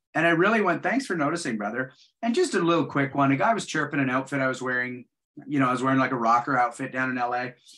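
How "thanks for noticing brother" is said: plain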